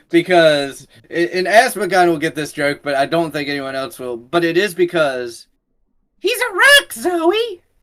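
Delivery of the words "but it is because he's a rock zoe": bad, slow, high sing-song puppet voice. Quoting a Sesame Street line to other speakers: bad Elmo impression. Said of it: "That was not a good Elmo impression".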